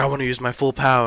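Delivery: mock grumpy, cranky, insistent grumbling. Retelling a movie scene where the heroine demands full power: imitating Captain Marvel cranky. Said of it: "gets cranky".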